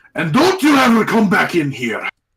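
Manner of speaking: furious, loud, swooping angry shout. Narrating a game scene, a large half-orc throws someone out, shouting. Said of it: "He shouts".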